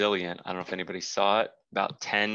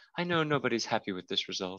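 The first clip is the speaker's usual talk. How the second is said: imitated flat, monotone delivery. Speaker mimics an interviewed player after her match: mocking her monotone. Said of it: "She was just like so monotone".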